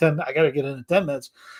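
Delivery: ordinary talk, nothing marked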